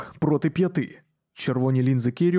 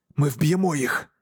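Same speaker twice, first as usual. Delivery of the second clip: plain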